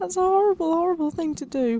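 put-on upset, wounded tone, all in play. Player telling off a game at Christmas, mock upset. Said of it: "I'm really upset now".

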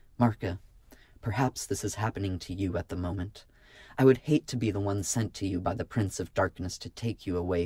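ordinary delivery

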